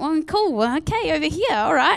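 mock sarcastic tone. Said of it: "I'm saying this with that kind of sarcasm".

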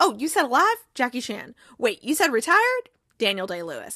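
ordinary talk, nothing marked

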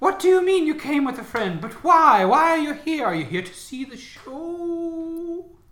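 echoing, ethereal showman voice.

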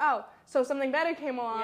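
usual speaking voice

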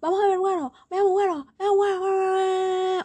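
dog-like barking yells. Recounting an exasperating break, imitating how a woman kept shouting. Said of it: "se ponía a gritar".

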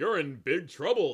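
booming, loud, menacing, threatening bug voice. Game master voices a ballistic bug confronting a player, in a menacing bug voice. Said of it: "the bug says menacingly".

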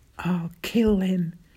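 soft, quiet whisper. A man pale with fury, after the narrator finishes speaking, softly whispered. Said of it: "he softly whispered".

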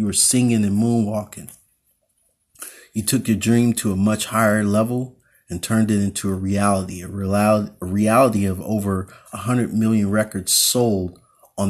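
plain

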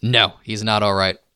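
ordinary delivery

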